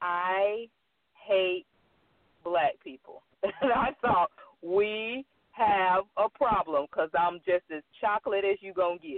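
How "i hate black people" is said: very serious tone, much slower. Speaker recounting a man's answer when asked what held him back, retelling a very serious tone. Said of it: "in this very serious tone".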